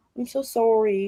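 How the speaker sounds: "sorry" said with a Canadian accent. Showing how Canadians say sorry: imitating a Canadian accent. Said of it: "It sounds like".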